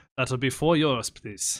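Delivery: put-on Austrian accent. Acting out someone in Austria selling a pickle, Austrian accent. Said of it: "That's my best Austrian".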